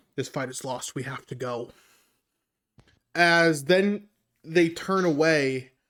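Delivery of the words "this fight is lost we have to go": very quiet, low, hushed half-whisper. The narrator voices one character half-whispering to another in a half-whisper. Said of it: "Purple whispers to the one in yellow".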